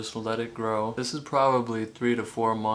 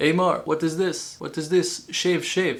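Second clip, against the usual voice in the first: put-on Greek accent, pitched up; 6 semitones higher, 3 dB louder than usual. Quoting the Greek restaurant owner reacting to his stubble, in a Greek accent. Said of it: "say this in his Greek accent".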